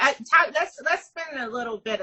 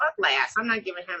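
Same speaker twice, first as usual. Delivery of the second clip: ordinary delivery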